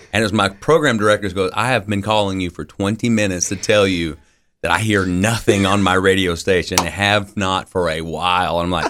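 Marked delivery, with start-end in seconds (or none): none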